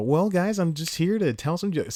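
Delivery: high voice, an octave up. Recalling how he'd talk after shaking someone's hand, Clark Kent voice. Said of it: "See, my voice goes up in an octave".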